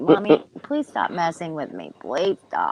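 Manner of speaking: swooping, sing-song dog voice. An owner fussing over her pup speaks for it, voicing her pet dog. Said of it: "He's like".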